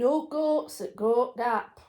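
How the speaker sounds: very loud put-on Yorkshire accent, Scottish twang. Chatting with another speaker, the speaker says it in a pure Yorkshire accent. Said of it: "Said in a pure Yorkshire accent".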